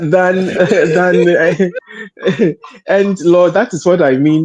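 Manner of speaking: talking through laughter. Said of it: "that is what is making me laugh".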